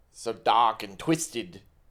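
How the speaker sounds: attempted Australian accent. Repeating a phrase after another speaker, an attempted Australian accent. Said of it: "you're still doing English".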